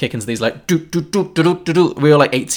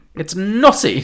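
plain

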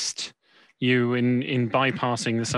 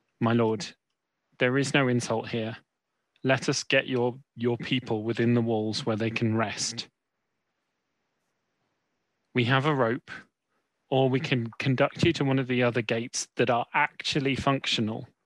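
dropped low and quiet so it won't carry. A player's character moves close to the Burgermeister to speak privately, in a dropped voice. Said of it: "I will drop my voice so that it's not carrying".

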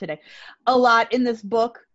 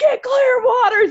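play-acted very high, shrill, loud screaming yell; 14 semitones higher, 5 dB louder than usual. Retelling a role-play where another player started yelling at them; retelling someone screaming. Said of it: "he just started screaming at me".

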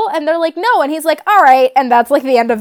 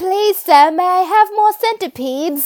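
put-on weak, feeble little baby voice, pleading, fading and dying; 3 semitones higher than usual. Showing what a baby voice sounded like, dying victorian orphan voice. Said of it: "like a dying Victorian orphan".

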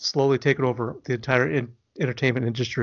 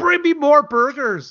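shrill, very high, loud squawking eagle screech; 13 semitones higher, 6 dB louder than usual. Joking about being an eagle that runs out of burgers, screeching eagle. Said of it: "you start screeching".

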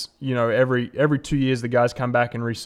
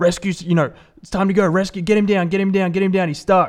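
put-on yell, much higher; 7 semitones higher, 4 dB louder than usual. Retelling how he started yelling at the crew, imitating someone yelling. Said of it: "he starts yelling at the crew".

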